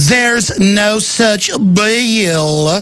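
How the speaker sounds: very slow cartoon voice, "bill" drawn out. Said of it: "a little [name] thing".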